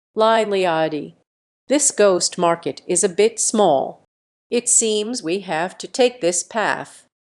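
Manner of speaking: ordinary delivery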